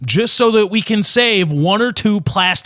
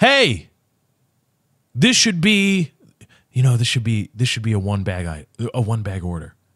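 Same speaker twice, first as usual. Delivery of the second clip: quiet, hushed, confiding half-whisper; 9 semitones lower, 3 dB quieter than usual. Retelling how a manager would lean in: imitating manager's half-whisper. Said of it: "whisper in your ear".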